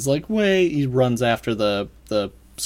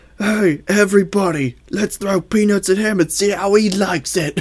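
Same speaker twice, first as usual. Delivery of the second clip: terrible put-on Cockney accent, loud and pitched up; 8 semitones higher, 5 dB louder than usual. Voicing a character the group meets in the story; Cockney accent. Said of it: "It says Cockney accent".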